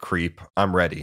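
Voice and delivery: ordinary talk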